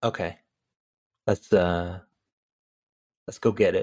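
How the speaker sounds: easy, offhand delivery with veiled menace showing. Retelling how the gangster asks for the money: imitating Albert Brooks, quietly menacing. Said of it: "the way Albert Brooks goes".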